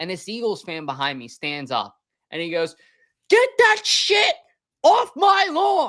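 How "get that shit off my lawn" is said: put-on very high, loud, cranky, angry old-man holler. Retelling an Eagles fan shouting at a downed Cowboys player, imitating an angry old man. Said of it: "like an angry old man".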